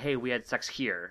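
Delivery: ordinary delivery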